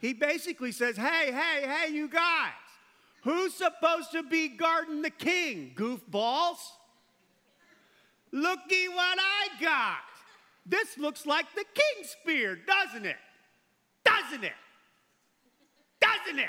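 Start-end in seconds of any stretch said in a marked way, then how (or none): 1.0-16.5 mock yelling from afar, higher and louder. Retelling David calling out to the army from a hill: acting out a shout. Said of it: "David wakes up the army with his voice".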